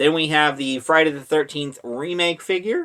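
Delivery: voice breaking suddenly mid-line. Going through your Friday the Thirteenth figures, with your voice cracking. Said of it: "and my voice cracked".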